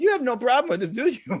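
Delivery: put-on German accent, pitched very high. Retelling what the nurse said to them, german accent. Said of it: "this nurse with a German accent".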